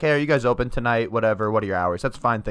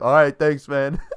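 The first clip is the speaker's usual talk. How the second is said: put-on drunk voice, higher pitch; 4 semitones higher, 4 dB louder than usual. Retelling a phone call from a caller: imitating a drunk caller. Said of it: "he was fucking hammered".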